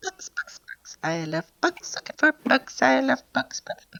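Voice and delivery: tiny, whispery little voice. Describing to the players a voice they hear in the scene; tiny little voice. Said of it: "you hear this tiny little voice going".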